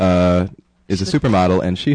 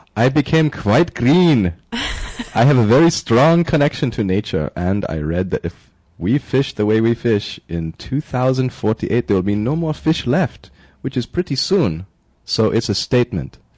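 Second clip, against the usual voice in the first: best-effort put-on Czech accent, pitched up; 5 semitones higher than usual. Quoting a vegan woman from the Czech Republic, trying a Czech accent. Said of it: "let me try my best Czech accent".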